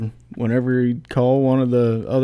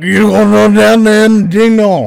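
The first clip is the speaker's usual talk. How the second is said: loud, high-pitched holler; 9 semitones higher, 12 dB louder than usual. Asked by another speaker to do a coach impression: Coach Orgeron impersonation. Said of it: "Give me a good Coach Orgeron impersonation".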